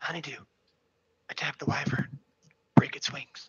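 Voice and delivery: loud, carrying stage whisper. Telling honeydew to attack the wyvern in the middle of combat: whispering. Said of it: "whisper to Honeydew".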